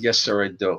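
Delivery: ordinary talk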